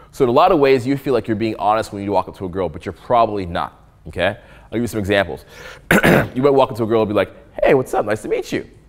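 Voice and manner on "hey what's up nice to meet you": fake-sounding, inauthentic, put-on casual tone. Speaker showing how someone greets a girl: inauthentic greeting. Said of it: "Your voice is not being authentic".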